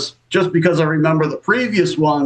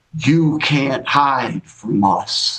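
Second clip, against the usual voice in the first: put-on whispery voice, lower; 2 semitones lower than usual. Retelling what the one who found them in the attic said, whispery voice. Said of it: "like a real whispery voice".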